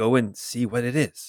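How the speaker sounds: quiet, faint, far-off distant voice. Voicing an unseen figure sending someone to check: quiet distant voice. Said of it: "It's quiet, it's at a distance".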